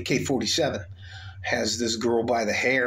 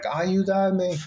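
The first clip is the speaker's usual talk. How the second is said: high, screamed, acted-out woman's voice, yelling; 8 semitones higher than usual. Speaker recalls hearing a young woman by a bridge: retelling a woman's screaming. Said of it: "she's yelling and screaming".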